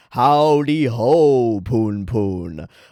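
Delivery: the word ho drawn out very long and slow. Showing the voice used for God in the reading: God voice. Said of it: "I've been doing this voice for God".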